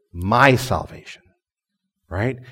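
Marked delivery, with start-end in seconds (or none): 0.2-1.2 "my" hit hard, strongly stressed. Speaking about God's grace and salvation, strong stress on my. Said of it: "I'm going to emphasize this word".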